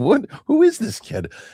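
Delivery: mock very high, giggling, laughing astonished disbelief. Retelling a reaction to a child's joke: retelling a laughing reaction. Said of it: "Oldest and I look at her laughing like".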